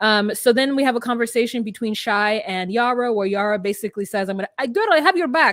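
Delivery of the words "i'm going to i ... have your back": put-on high voice sliding into Eastern European accent. Voicing Yara in a conversation with Shy, in a wrong Eastern European accent. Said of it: "that's the wrong accent".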